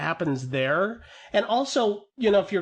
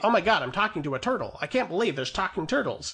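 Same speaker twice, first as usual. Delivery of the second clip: put-on snarky, wisecracking, self-aware delivery. Imitating movie characters who break the fourth wall: imitating a smart-alecky tone. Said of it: "weird kind of smart alecky tone".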